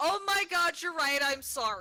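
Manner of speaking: mock loud, proclaiming outburst. Retelling reacting to a straightener flipping: retelling a loud proclamation. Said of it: "I very loudly proclaimed".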